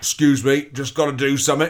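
put-on London accent. Playing a game where everyone talks like Michael Caine: Michael Caine voice. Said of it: "let's all talk like Michael Caine".

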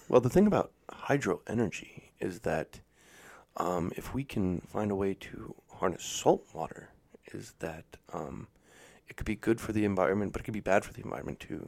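breathy, calculated, weighing every word. Imitating the answer to a question about hydro energy: Elon Musk impression. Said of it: "That was a pretty good Elon Musk impression".

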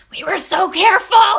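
loud, high-pitched stage whisper. Retelling a movie scene where characters talk in loud whispers: imitating a loud whisper. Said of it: "they talk in the loudest whispers".

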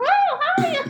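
high-pitched, loud squeaking voice. Asking a guest to do a cartoon mouse voice, demonstrating: Mickey Mouse voice. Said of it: "doing a Mighty Mouse, uh, kind of a voice or, or Mickey Mouse".

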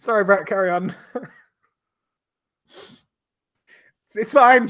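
laughing through the words. Apologizing to brett and asking him to carry on, giggling while talking. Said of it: "me and Al just got the giggles".

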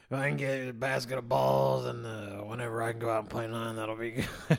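soft, rough, gravelly morning voice. Retelling talking to a lady in the morning: imitating own gravelly morning voice. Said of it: "the whole time I was talking like this".

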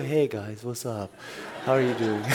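put-on stoned voice. Recalling how people said he talks, imitating a stoned-sounding voice. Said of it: "You sound like you're high all the time".

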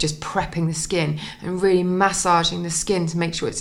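normal talking voice

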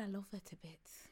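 voice softened right down, gentle. Repeating a contestant's quote to friends: softened voice imitating Greg. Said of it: "she just softened her voice".

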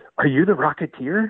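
very sugary-sweet little voice. Telling a story, the speaker quotes a man standing behind him: imitating the sweetest voice. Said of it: "in the sweetest voice".

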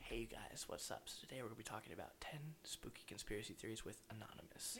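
soft, breathy, whispery, gentle vlogger voice. Doing a Shane Dawson impression at a friend's request: soft Shane Dawson voice. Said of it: "Can I do my Shane Dawson impression? ... That's how he sounds. He always sounds so soft".

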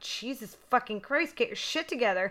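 put-on, fed-up, irritated outburst, blurted. Speaker retells snapping at someone crying while holding a gun; retelling an irritated outburst. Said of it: "I was getting really irritated".

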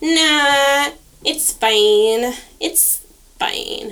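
put-on irritating voice, very slow and drawn out. Told to say it in the most annoying voice possible. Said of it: "In the most annoying voice you can do".

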